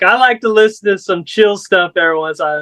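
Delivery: ordinary talk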